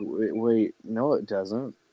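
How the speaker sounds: mock very slow, drawn-out, dumbfounded bewilderment. Retelling own reaction to hearing the Megazord talks: retelling being dumbfounded. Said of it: "I was, like, dumbfounded. I was like".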